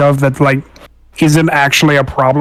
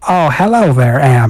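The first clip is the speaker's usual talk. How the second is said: put-on grandmotherly voice. Doing a bit where Enola greets Amp, in Enola's grandmotherly voice. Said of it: "with a like a grandmotherly voice".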